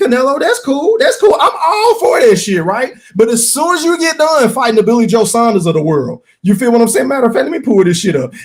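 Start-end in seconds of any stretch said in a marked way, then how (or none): 0.0-2.9 high, rising, sarcastic mock-agreeable okay. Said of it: "I said".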